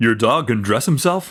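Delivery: broadcaster-style delivery. A man takes the phone and questions the caller: newscaster voice. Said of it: "talks to Link in a newscaster voice".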